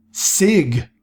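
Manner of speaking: angry, furious shout, yelling out. Reading a story aloud, a character calls out: angry shout. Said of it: "shouted Kirana angrily".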